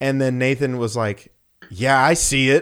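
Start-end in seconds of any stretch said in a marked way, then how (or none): 1.7-2.6 mock snotty, loud, sassy, dismissive attitude. Retelling a friend's reply to an adult: imitating a kid giving attitude. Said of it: "giving him attitude".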